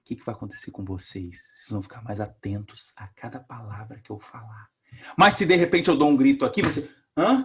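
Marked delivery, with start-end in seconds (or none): 0.0-4.7 very quiet, soft, low, hushed voice. Lecturer deliberately lowers voice to show students how attention sharpens: speaking softly. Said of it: "eu aqui falando baixinho".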